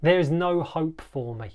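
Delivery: ordinary delivery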